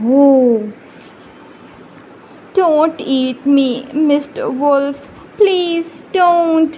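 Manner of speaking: scared, frightened, begging pleading cry. Reading a story aloud, the fox answers the hungry wolf: frightened pleading cry. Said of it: "cried the fox".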